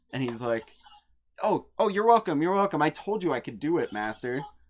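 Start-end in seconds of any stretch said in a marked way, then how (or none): 1.4-4.4 loud, super happy, beaming, overjoyed gushing. Voicing Zelron thanked by his master: super happy, beaming. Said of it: "He's super happy".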